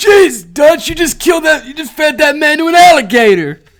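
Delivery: very high, very loud character voice outburst. Doing a John impression reacting to Dutch feeding a man to an alligator. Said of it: "my John impression".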